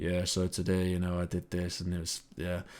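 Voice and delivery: low, soft, boring monotone voice. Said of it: "with a monotone voice".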